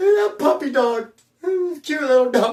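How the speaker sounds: put-on, tearful, high, sobbing crying voice. Acting out crying at a dog commercial while coming down: imitating own crying. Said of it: "I will cry".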